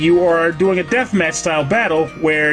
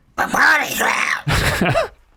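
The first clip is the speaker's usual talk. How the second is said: put-on cartoon duck voice, much higher, slower; 7 semitones higher than usual. Show host announcing the bonus round segment, in a bad Donald Duck voice. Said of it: "That was the worst duck voice I've ever done".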